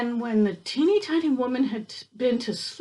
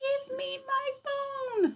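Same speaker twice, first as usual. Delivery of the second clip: tiny, very high, soft little voice; 6 dB quieter than usual. Reading the teeny tiny story aloud, the voice from the cupboard speaks, teeny tiny voice. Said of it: "a teeny tiny voice from the teeny tiny cupboard".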